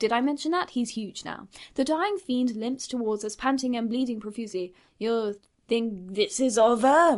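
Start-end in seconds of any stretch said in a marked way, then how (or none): 5.0-7.2 put-on dubious French accent, very slow and drawn out. Narrating a fight where the dying Dracula limps toward the group, Dracula in dubious French accent. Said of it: "he said in a dubious French accent".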